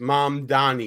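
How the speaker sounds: put-on Brooklyn accent, dropped very deep. Host on the first show back, naming the next topic; Brooklyn accent. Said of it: "That's my Brooklyn accent right there talking".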